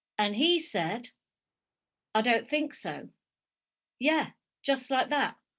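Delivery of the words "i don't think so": imitated deadpan, flat delivery. Retelling someone's reply after being told he's dead: imitating a deadpan reply. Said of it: "Kind of deadpan".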